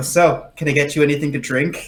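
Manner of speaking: normal talking voice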